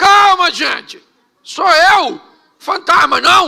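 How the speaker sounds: high, loud, reassuring shouting.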